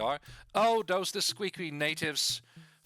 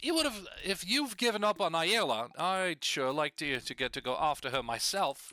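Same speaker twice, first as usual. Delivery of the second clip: put-on light touch of British accent. Voicing a character meant to have a New York accent, slightly British accent. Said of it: "make him him a little bit more British".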